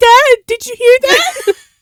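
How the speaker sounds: very high shout. Retelling a story, calling out to Dad to ask if he heard: retelling own shout. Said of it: "and then I'm like shouting like".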